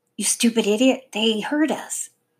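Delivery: sharp, snapping whisper. Stella speaking to another child, snapping in a whisper. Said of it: "Stella snapped in a whisper".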